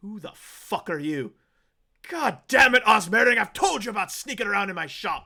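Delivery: very loud, high, enraged, furious yell. A game master voices a shop owner catching a sneaking character, very angry voice. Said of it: "You hear a very angry voice".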